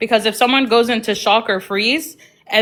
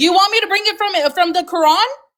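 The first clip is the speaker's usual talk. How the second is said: very high-pitched, raised shouting; 9 semitones higher than usual. Arguing with another speaker about sources, yelling. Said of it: "why are you yelling again?".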